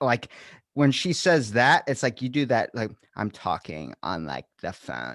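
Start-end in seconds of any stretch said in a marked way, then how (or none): 3.1-5.1 crackling, creaky vocal-fry voice. Imitating people who talk with an annoying vocal fry: imitating vocal fry. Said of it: "That's the voice cackle I don't like".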